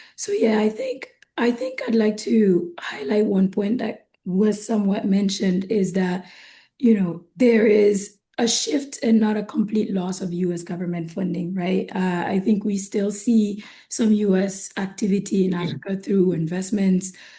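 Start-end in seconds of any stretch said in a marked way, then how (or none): 0.2-5.1 sick, sore voice giving out, dropping to whisper. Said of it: "apologies for my voice today".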